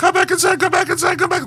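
put-on very high, rapid screaming like a small child. Retelling a story where rabbits run in circles: imitating a screaming little child. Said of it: "like screaming like a little child".

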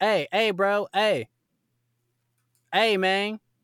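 put-on high, drawn-out calling. Retelling how a man called out through a car window: imitating someone yelling. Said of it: "he's yelling through the window like".

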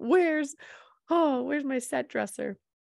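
mock, put-on frustrated tone. Getting into character, the speaker acts out mock frustration. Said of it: "Now I'm being frustrated".

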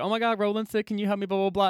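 normal talking voice

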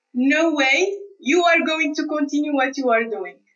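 ordinary talk, nothing marked

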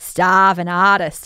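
put-on Boston accent. Joking about how an accent slipped out, in a mock Boston accent. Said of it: "I'm from Boston or something".

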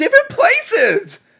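very high, slow mock starlet squeal. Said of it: "She also says".

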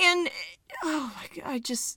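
soft, choked-up voice, catching and breaking. Talking about how Nigel's career gets ruined, getting choked up. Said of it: "I'm getting choked up over here".

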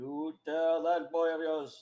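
very loud, high, bad Scottish or Irish accent. Speaker does scene lines in a shitty Irish or Scottish accent. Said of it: "Is that supposed to be Irish or Scottish?".

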